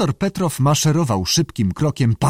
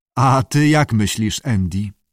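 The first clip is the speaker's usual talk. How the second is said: plain reading voice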